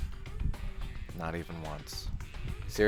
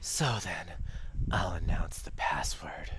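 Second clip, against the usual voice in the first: breathy put-on voice, lower pitch; 3 semitones lower, 4 dB quieter than usual. Announcing the password in character, breathy exhaling Nagito voice. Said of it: "I'm exhaling so much to do his voice".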